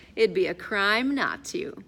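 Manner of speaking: ordinary talk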